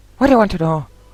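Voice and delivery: appalling Irish accent, high and loud.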